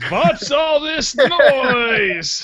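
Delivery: put-on very high, very slow funny old vampire voice. Retelling a movie scene where an old vampire wakes up: imitating the old vampire's funny voice. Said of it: "I just thought the voice was so funny 'cause it was like".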